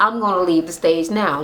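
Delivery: whispered voice. Retelling what a guest whispered to Cynthia before leaving: imitating someone whispering. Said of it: "he whispered to Cynthia, like".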